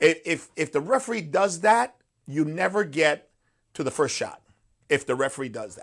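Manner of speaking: plain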